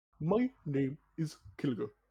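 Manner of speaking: dropped, low-pitched voice. Coached by others to lower the pitch, introducing the character in a lowered-pitch character voice. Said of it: "Like lower the pitch of it".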